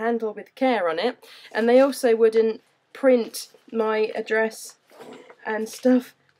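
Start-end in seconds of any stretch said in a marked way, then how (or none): none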